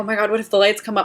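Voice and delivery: put-on panicked tone. Retelling getting stuck onstage during a blackout: retelling panicked thought. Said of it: "And I'm panicking, thinking".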